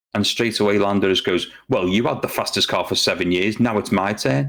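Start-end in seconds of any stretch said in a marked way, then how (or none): 1.6-4.5 really snotty, put-down tone. Retelling a driver's reply to a compliment: imitating a snotty retort. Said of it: "being really snotty".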